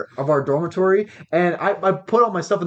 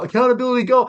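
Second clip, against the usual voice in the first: mock drilled, high unison call-back group yell; 7 semitones higher than usual. Retelling how the trainees answered the sergeant: imitating a group yell. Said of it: "we'd all have to yell".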